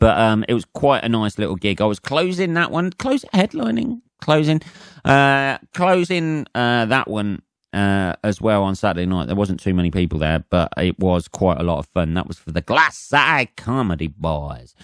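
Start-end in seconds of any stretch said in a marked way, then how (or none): 12.1-14.7 casual put-on American accent. Naming the comedy group behind the gig: American accent. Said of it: "saying that in an American accent".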